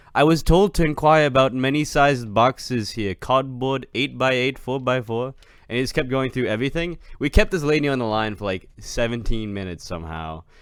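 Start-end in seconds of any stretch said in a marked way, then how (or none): 0.1-5.3 loud, fake, put-on Indian accent. Retelling a phone call where he asked a lady about boxes: put-on indian accent. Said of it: "he put on an Indian accent".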